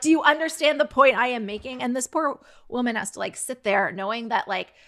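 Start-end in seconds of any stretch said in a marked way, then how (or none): 0.0-1.8 loud, shrill, raised-voice screaming. Retelling how a man kept screaming at a woman: retelling a scream. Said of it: "just screaming at her".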